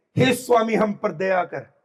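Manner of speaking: ordinary delivery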